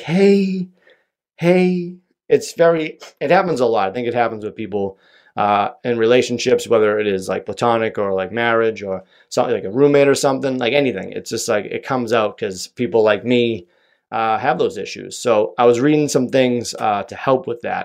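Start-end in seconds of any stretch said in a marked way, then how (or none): 0.0-1.9 high, squeaky, sheepish hey. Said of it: "you're like".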